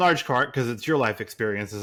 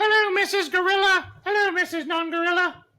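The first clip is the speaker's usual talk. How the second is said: put-on comic woman voice, much higher. Joining a co-host's bit, greeting someone, Monty Python woman voice. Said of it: "I'm woman like Monty Python woman".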